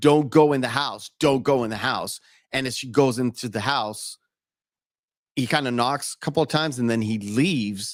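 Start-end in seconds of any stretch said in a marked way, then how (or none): none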